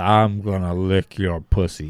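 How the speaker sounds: put-on slow, drawn-out, drunken drawl. Retelling what a drunk man said on a plane: Scott Hall voice. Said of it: "that was a good Scott Hall voice".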